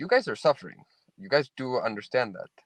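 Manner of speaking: ordinary talk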